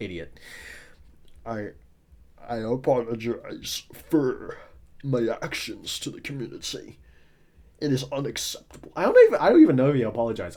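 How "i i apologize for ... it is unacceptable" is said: stiff, deep, slow, changed voice. Retelling a dev's apology video: imitating a dev's deepened voice. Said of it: "He used a goddamn voice changer to make his voice deeper".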